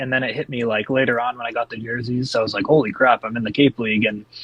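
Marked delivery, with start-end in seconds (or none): none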